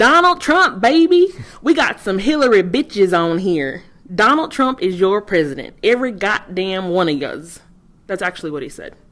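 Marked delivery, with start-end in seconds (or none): 0.0-7.6 loud, slow, hollering bad put-on Southern accent. Acting out a man happy that Trump won, screaming in a bad redneck voice. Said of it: "let me try to get my redneck voice on".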